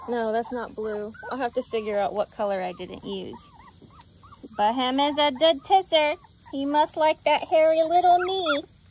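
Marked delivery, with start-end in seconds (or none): 4.6-8.6 put-on silly baby talk. Speaker coloring in and commenting on a figure, in a baby talk voice. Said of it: "I feel so silly talking like a baby".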